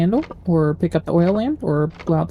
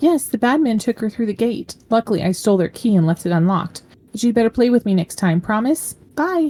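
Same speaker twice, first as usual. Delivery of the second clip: put-on high, chattering small girl's voice; 5 semitones higher than usual. Voicing a little girl answering a man's questions: little girl voice. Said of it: "Sounds like the voice of a little girl".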